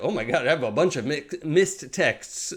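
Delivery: plain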